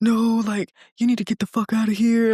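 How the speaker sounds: confrontational, hostile, aggressive outburst. Retelling what he said at the door: imitating someone getting aggressive. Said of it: "getting aggressive".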